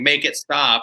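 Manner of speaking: mock light, small, pained, distressed screaming cry. Retelling what the wife screamed from over there: imitating a screaming wife. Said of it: "I hear my wife screaming, saying".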